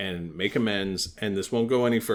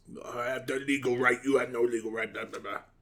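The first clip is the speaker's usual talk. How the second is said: speaking with a put-on French accent; 3 semitones higher, 4 dB quieter than usual. Imitating a neighbor who claims legal rights: put-on french accent. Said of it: "sorry for my French accent".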